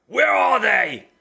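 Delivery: raw, furious, rough, high yell at full volume. Voicing an unseen male voice heard yelling: very angry shouting. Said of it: "very, very angry, shouting and saying".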